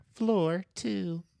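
computerized announcer voice. Acting out an elevator scene, announcing the floor in a computerized elevator voice. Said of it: "a computerized voice that announces the floor".

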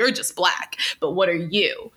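mock disgusted tone. Retelling what a man said when he turned to her: imitating a disgusted tone. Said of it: "with a surprising level of disgust".

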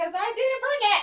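shouting. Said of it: "that's why I'm yelling it".

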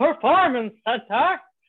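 loud put-on Canadian accent. Introducing a coach, saying her workplace in a man's canadian hockey voice. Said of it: "I need to make a man's Canadian hockey voice".

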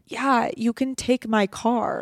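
play-acted, slow, disgusted and put-upon tone. Retelling a roommate's reply after being woken early: imitating Madison, disgusted. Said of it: "she rolls over with this look of disgust and she goes".

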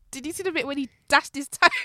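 talking through laughter. Asking another speaker about a funny moment, laughing while talking. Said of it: "Sorry, I'm just laughing".

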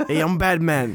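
put-on Italian accent, dad-like voice. Joking about Batman's padded suit, voicing him as an Italian dad. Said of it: "I don't know what accent that was".

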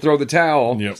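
ordinary talk, nothing marked

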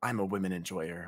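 whispered voice. Acting out a line whispered into an old lady's ear: whispering. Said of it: "As I whisper in her ears".

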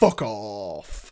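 really deep, long, drawn-out dismissive tone. Retelling a big bodyguard's line from a film: imitating a deep, drawn-out bodyguard line. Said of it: "he says it really deep and long".

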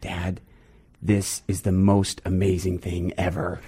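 soft, hushed stage whisper, near half-whispered. Retelling what a young son said during a cleanup: imitating a near half-whisper. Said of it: "he almost kinda whispers".

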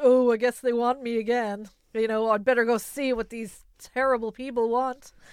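loud and sarcastic. Quoting Cinderella talking to the mice: imitating sarcastic Cinderella. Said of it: "she's also very sarcastic".

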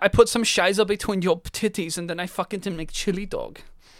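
mock German accent, male voice.

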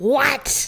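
demonic voice. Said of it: "It's my demon voice".

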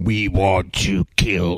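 very deep, low, drawn-out possessed-man demon voice. Telling of a clip of a possessed man, the speaker imitates the demon's voice. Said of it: "I mimicked him".

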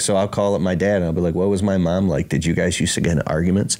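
ordinary delivery

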